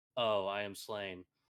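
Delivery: slow, flat, utterly deadpan delivery. Retelling how a student reading Polonius in class said the line, mimicking a deadpan read. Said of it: "like in the most deadpan read I've ever heard".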